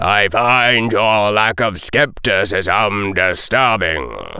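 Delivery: intoned, deep and low rumbling voice. A captain intones a remark to the group; deep, rumbling voice. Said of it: "intoned in a deep, sort of rumbling voice".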